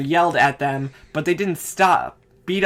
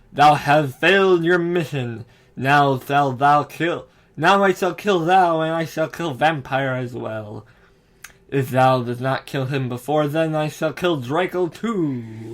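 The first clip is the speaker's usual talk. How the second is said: evil, raspy, drawn-out villain voice. Reading a story aloud, Darth Vader threatening the narrator, in an evil raspy Darth Vader voice. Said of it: "said evilly in his raspy voice".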